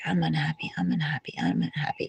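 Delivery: running, complaining grumble in a cat voice. Describing how their cat sounds, imitating a grumbling cat. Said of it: "basically talking like this".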